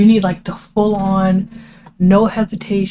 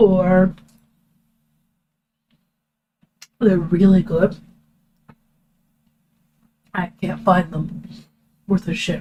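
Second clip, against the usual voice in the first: speaking while chewing, mouth full. Talking about a show while eating a cookie: talking with mouth full. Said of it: "sorry, I'm eating".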